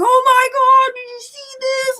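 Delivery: very high-pitched, excited freaking-out voice. Retelling what the speaker said on the phone to their dad: retelling freaking out. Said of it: "Like freaking out".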